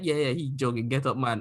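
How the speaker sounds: words broken up by laughing. Retelling how a classmate laughed it off: imitating someone laughing while talking. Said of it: "he kinda laughed like".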